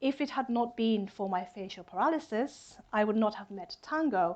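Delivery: ordinary delivery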